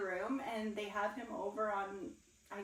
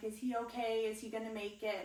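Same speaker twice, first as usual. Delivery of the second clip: ordinary talk, nothing marked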